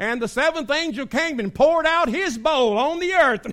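put-on loud, high-pitched, genuine Southern accent. Retelling how a drama angel read Revelation: imitating a southern accent. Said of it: "she had a real southern accent".

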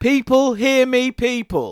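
high, drawn-out showman's crowd-calling announcer voice. Opening the show while the co-host objects: very loud announcing voice. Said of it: "You're going very loud".

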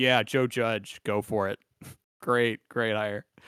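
slow, sarcastic drawl with put-on, insincere approval. Imitating a coach praising a hire: imitating Belichick's sarcastic tone. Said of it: "hear the sarcasm in his voice".

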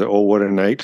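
ordinary talk

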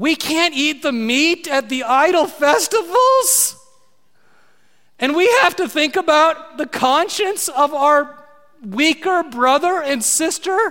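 put-on, high, whiny complaining voice. Imitating people whining to the Apostle Paul, in a mock whiny voice. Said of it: "How do you like my whiny voice?".

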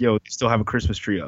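ordinary delivery

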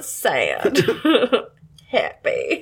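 swooping, animated character voice, wide pitch swings. Doing an impression when asked for more: Tim Curry impression. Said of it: "is that the best Tim Curry that you got".

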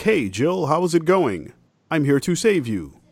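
put-on slow, high, drawling suburban-kid voice.

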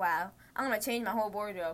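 ordinary talk

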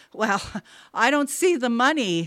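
laughing nervously. After a door bangs upstairs, the son speaks with a nervous laugh. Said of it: "Abe laughed nervously".

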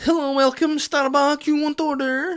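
put-on very high, odd, weird Larne accent. Retelling a barista's greeting at the counter: imitating a barista's weird accent. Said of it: "he dropped his wee weird accent".

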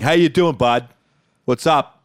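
mock plain, blunt, no-nonsense guy-to-guy tone. Acting out greeting guys in the locker room: acting out a straightforward greeting. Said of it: "real straightforward".

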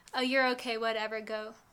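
plain

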